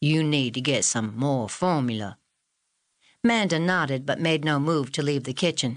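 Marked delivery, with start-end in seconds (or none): 0.0-2.2 put-on Southern US accent. Reading Cecile's line to Mrs. Frank in the kitchen: deep Southern accent. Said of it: "she said in her deep South accent".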